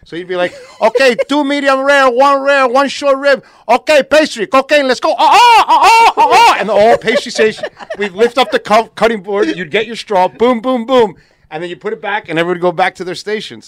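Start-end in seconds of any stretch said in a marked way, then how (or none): 0.8-6.5 put-on loud, slow, bellowing Cuban accent. Retelling the chef organizing the kitchen orders: imitating his funny cuban accent. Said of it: "he had a funny accent".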